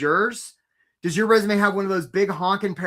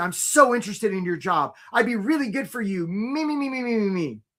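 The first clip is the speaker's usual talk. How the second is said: mock gushing, overly passionate, eager tone; 2 semitones higher than usual. Imitating applicants who follow up: mock passionate plea. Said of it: "you very passionately say".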